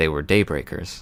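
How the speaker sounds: barely voiced, very hushed whisper. Voicing a character answering the players in the story: hushed whisper. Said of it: "in a very whispered, hushed tone".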